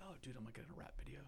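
soft whisper full of amazement and awe.

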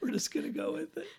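high, whispered aside.

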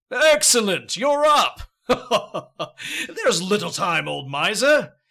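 room-rattling, booming, slow giant voice. Narrator voices a giant greeting the woken old miser, booming giant voice. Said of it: "The giant's booming voice rattles the room".

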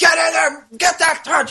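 mock ferocious yelling, pitched very high. Retelling a mother at a fencing match: imitating a yelling mother. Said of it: "And she's yelling at the referee".

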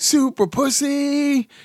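mock showy superhero shout, high, "pussy" drawn out. Telling a story about a woman jumping out at passersby, retelling her yell. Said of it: "makes a pose and yells".

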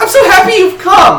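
very high, loud, playful little voice. A winged figure greets you and your pseudo-dragon, playful voice. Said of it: "In a playful voice".

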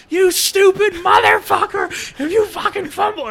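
mock very high, shrill, raging, furious scream. Retelling a tirade at a player who fumbled, in front of parents, retelling own screaming. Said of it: "And I was just like screaming".

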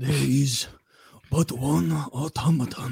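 put-on Japanese accent. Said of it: "the automaton is a sacred and fearful thing".

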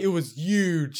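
huge with the h dropped, said yuge. Teasing the other speaker about how they say huge: saying huge like Donald Trump. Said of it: "you say it like Donald Trump".

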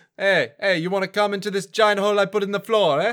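exaggerated cartoon Italian accent. Podcast host jokingly presents a new take on a character: Terence T. D'Arby as Mario. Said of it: "offend some of our Italian listeners".

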